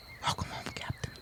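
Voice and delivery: soft, breathy, hushed whisper. Voicing a character welcoming the captain home: whispering. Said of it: "And she just whispers to him".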